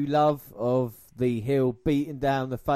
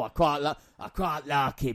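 poor, bad put-on fake Scottish accent. Imagining someone's reaction, trying to do a scottish accent: bad put-on scottish accent. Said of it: "I'm trying to do a Scottish accent".

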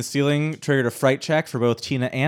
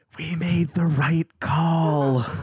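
hushed whisper, higher pitch; 4 semitones higher than usual. In a game, voicing Tina as she whispers to Terry, whispering. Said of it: "Tina whispers to Terry".

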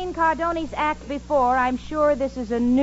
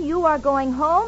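ordinary delivery

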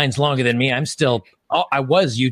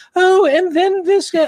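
very high, loud put-on woman's voice; 5 dB louder than usual. Describing how an Australian read articles on his phone, in a put-on lady's voice. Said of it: "he'd do a lady's voice".

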